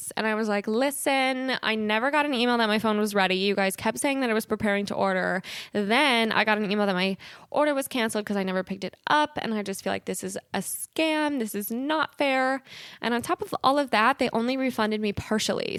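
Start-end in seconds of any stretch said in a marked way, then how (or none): none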